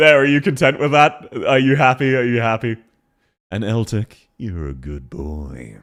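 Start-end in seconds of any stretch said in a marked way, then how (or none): 3.5-5.8 toned-down seductive, very low, very slow. Speaker tries saying the same phrase in different ways, this one less seductive. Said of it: "That was less seductive".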